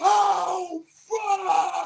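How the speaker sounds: very high shrieking scream with drawn-out "oh". Retelling jumping up after opening a delivery; retelling a scream. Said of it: "I jumps up and started screaming".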